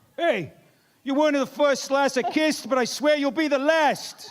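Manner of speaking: loud New York accent, very high-pitched. Getting into character for a line: New York accent. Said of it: "Should we do a little New York accent?".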